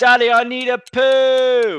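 put-on very loud, shrill, high little girl shout, very slow. Retelling the speaker's little girl in a restaurant, imitating a child shouting. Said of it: "shouts at the top of her voice".

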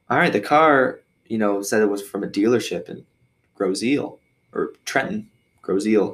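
normal talking voice

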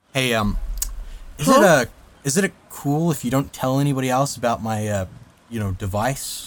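hushed, halting in-character whisper full of hesitations. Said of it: "whisper to Sad Machine".

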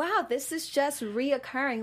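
ordinary delivery

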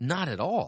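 usual speaking voice

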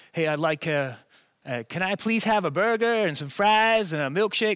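best-attempt put-on American accent. Retelling an order given at a drive-through window, in a put-on American accent. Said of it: "I reverted to my best American accent".

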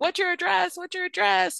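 frantic, very high, raw-edged, ragged panicked scream. Quoting a nurse on a 911 call, retelling a panicked scream. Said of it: "she's screaming".

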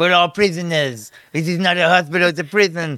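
fake cartoon French accent. Retelling another person's comment, done in a Pepe Le Pew accent. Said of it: "That's a Pepe Le Pew accent".

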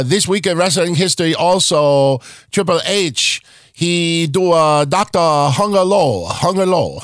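put-on Japanese wrestler voice. Opening a wrestling history show, impersonating a Japanese wrestler. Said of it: "my impersonation of a Japanese wrestler".

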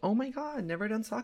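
high, put-on childlike little-kid voice. Retelling a bar story about sake bombs, quoting people in a childlike put-on voice. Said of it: "That was in their voice".

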